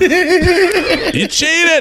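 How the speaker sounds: put-on very high shriek, "you" stretched long. Speaker retells someone suddenly yelling out mid-conversation, retelling a scream. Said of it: "Kyle screams at the top of his lungs".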